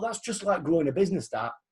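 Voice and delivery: plain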